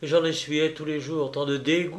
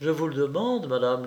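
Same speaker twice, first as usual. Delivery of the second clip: ordinary delivery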